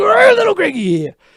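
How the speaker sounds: tough-guy bluster, cranked up loud. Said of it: "Macho Man Randy Savage".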